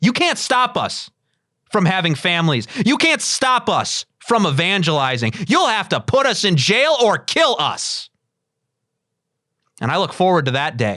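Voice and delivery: heated, defiant outburst. Speaker addressing those who would stop them evangelizing: getting angry. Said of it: "I think I'm getting too angry".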